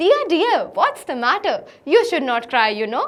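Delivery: bright, happy, friendly, sing-song tone. Practising an english line in a happy, friendly way: happy, friendly way. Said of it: "happy happy वे में बोलने की".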